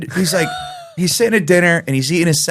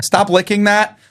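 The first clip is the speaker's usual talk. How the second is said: high-pitched, stern parental scolding tone; 5 semitones higher than usual. Retelling what parents at a four-year-old's birthday party kept saying: imitating a parent warning a child. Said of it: "all I hear is".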